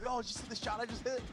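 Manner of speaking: mock very high, hyped, show-off bragging tone. Imitating how another player would brag: imitating someone popping off. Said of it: "they'd just be popping off".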